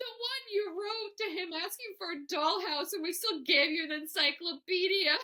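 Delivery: acted distraught, hysterically crying voice. Retelling a mother's words about a Santa letter: imitating a distraught mother. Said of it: "She was distraught".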